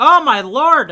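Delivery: loud, high-pitched, thrilled excited yell. Playing a game and getting excited at what happens, yelling. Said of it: "Sorry for yelling".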